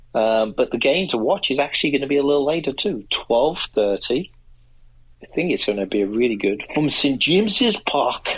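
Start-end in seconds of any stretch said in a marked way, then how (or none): 6.7-8.2 high, put-on Geordie Newcastle accent. Previewing a weekend football match, naming the stadium in a Newcastle accent. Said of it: "That's my Newcastle accent".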